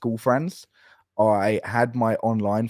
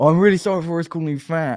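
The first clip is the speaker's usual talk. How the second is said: put-on tipsy voice, loud and pitched-up; 7 semitones higher, 6 dB louder than usual. Retelling an old friend's voice note from a club smoking area, imitating a drunk friend. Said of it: "a drunk voice note".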